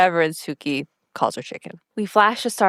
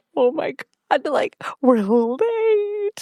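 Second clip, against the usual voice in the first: put-on high, giddy, really excited; 7 semitones higher than usual. Retelling Mia arriving late to a meeting as everyone stares: imitating Mia's giddiness. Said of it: "And she's like giddy".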